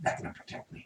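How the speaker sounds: very quiet, hushed, breathy, barely voiced whisper. Game narrator voicing a character after a shadowy figure stops his axe, whispering. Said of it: "the whisper that comes out of his mouth".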